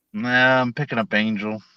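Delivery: deflated, disappointed, let-down tone. Asked what they're up to today, answer sounding disappointed. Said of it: "why do you sound so disappointed?".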